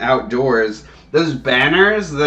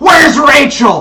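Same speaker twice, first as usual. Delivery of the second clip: very high, very loud, furious mad yell; 13 semitones higher, 8 dB louder than usual.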